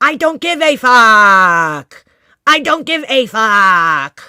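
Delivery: mock robotic rage, very loud, "fuck" stretched. Describing how a woman talks, imitating her robotic, angry voice. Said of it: "she gets in her robotic, angry voice".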